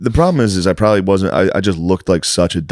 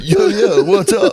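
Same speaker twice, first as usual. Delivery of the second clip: very high, stretched-out, drawn-out slangy street talk; 13 semitones higher than usual.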